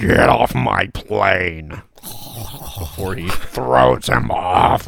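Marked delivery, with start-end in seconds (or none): 0.0-1.7 exaggerated gurgly rasp, very slow, rough and loud. Quoting a film line: gurgly Harrison Ford voice. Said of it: "Air Force One, Harrison Ford".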